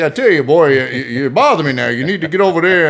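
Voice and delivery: loud, crowing cartoon rooster voice. Retelling joking with a younger coworker, do a Foghorn Leghorn voice. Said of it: "I was giving a little Foghorn Leghorn".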